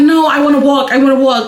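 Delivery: normal talking voice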